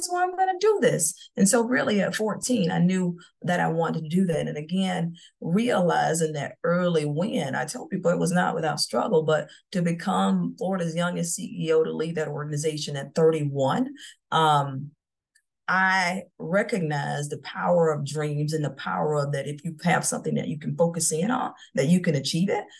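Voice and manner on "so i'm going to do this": high, excited, thrilled tone. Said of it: "I was like".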